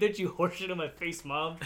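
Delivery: ordinary talk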